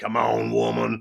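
rough-edged, croaking, creaky complaining voice. Imitating how Tim might sound: Tim's voice. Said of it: "You think that's what Tim would sound like?".

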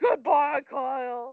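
casual, tossed-off, offhand delivery. Telling a story about Kris Jenner at Nobu, the speaker quotes her: imitating Kris Jenner. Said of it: "and she was like".

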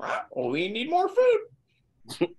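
very high, chirping, swooping birdlike voice. In a role-play game, a player answers another player in a bird voice. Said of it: "You guys like my bird voice?".

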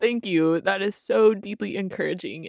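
speaking while crying, teary voice. Thanking the other speaker after hearing their answer, speaking while crying. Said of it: "I'm crying".

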